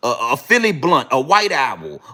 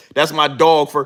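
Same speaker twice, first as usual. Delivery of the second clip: ordinary delivery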